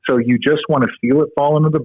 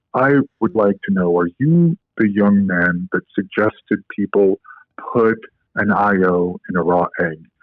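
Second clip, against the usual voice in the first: put-on very deep male voice, lower; 3 semitones lower than usual. Retelling a stranger's question to the speaker, in a very deep voice imitating James Orlowski. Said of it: "in a very deep voice".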